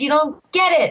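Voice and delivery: screaming, crying out through sobbing tears. Retelling a man's outburst during a race, imitating crying and screaming. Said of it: "he's crying and he's screaming".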